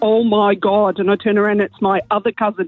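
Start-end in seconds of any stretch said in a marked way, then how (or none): 0.0-1.0 put-on thick Derry accent, much slower. Retelling meeting cousins in a bathroom, one calling out in a thick Derry accent. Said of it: "in a really thick Derry accent".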